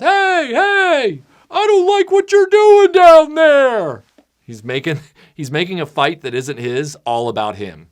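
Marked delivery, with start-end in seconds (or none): 0.0-4.0 very high, loud, slow mock yell. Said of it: "The guy yelling from the grass".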